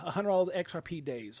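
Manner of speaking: ordinary talk, nothing marked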